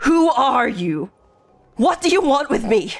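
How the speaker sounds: intimidating, snarling voice. Game master voices a character made magically intimidating toward this guy, snarling. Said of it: "he just uh, snarls".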